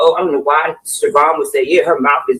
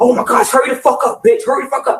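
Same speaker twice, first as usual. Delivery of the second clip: very high, furious, angry screaming, acted out; 9 semitones higher than usual. Retelling how the mother yells while being changed: imitating someone yelling angrily. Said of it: "she'll yell and scream out, like".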